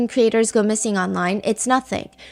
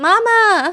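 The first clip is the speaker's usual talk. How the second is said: very high, long, stretched-out scream; 9 semitones higher, 6 dB louder than usual. Describing a TikTok reaction creator's trademark: imitating Mama Guy screaming. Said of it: "he screams like".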